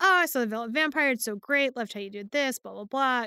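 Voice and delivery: normal talking voice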